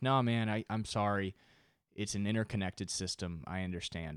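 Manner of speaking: play-acted tone that comes off sarcastic. Retelling his own apology to a friend: imitating his own sarcastic-sounding apology. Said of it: "which sounded completely sarcastic and bullshit".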